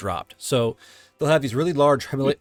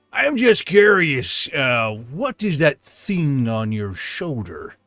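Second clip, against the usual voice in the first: slow, stocky, scarred dwarf character voice. Storyteller voicing a dwarf who asks the listeners a question, dwarf character voice. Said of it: "a rather stocky, scarred up dwarf".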